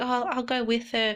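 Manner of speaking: put-on, fake, sugary sweet, all-nice tone. Retelling how mother acted in front of family: imitating mother's fake niceness. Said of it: "pretending to be all nice".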